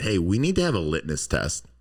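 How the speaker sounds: ordinary delivery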